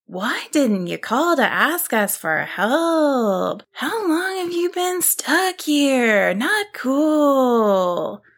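high, slow, rising, drawn-out exclamation of "cool". A brachiosaurus finds Nessie stuck in the cove and calls out to her, exclaiming. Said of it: "one of the brachiosaurus exclaimed".

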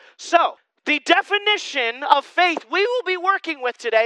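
high voice breaking mid-phrase. A speaker teaching believers introduces today's definition, voice cracking. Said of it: "my voice just cracked".

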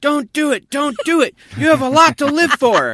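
shrill, very loud, high-pitched yelling. Blind speaker retelling a stranger yelling at them on a train platform, retelling a stranger's yell. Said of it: "a gentleman just starts yelling out".

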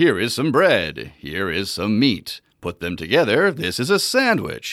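TV announcer-style narration, broadcast announcer voice. Showing the voice he started using while making a sandwich: announcer voice. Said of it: "announcer voice".

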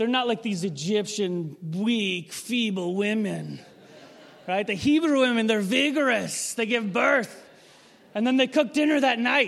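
terrible, clumsy put-on Russian accent. Speaker suggests reading a line aloud in an accent to the audience, terrible russian accent. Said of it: "you almost need to read that line in like a russian accent".

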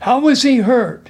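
insistent, demanding tone. Red questions Inu about Brave's injury, demanding. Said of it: "Red demanded".

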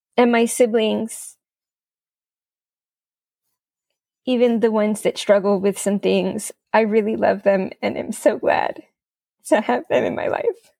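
emotional, moved voice. Speaking to listeners about family, emotional. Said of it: "I'm so sorry that I'm so emotional".

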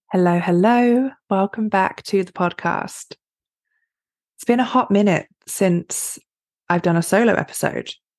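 slightly hoarse, raspy voice. Host welcomes listeners back to a solo podcast episode, slightly raspy voice. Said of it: "apologies if it sounds a little raspy".

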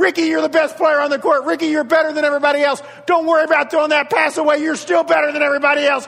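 high, loud hollering and yelling. Retelling a mom yelling to her son on a silent court: retelling a mom's yelling. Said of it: "she's yelling things like".

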